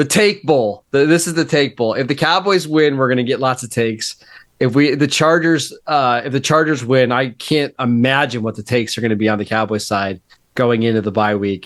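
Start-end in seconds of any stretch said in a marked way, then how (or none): 0.0-1.9 enthusiastic, pumped, hyped-up excited delivery. Introducing the Monday night game of the week: excited. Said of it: "you sound excited about it".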